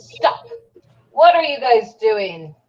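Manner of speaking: in-character goblin-language shout, yelling. Role-playing a scene with goblins, the player's character yells at them. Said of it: "I yell and goblin".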